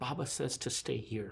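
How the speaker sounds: hushed, very quiet, low murmur. Game master speaking as Sura to a player, Sura speaking very quietly. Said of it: "Sura just says to you very quietly".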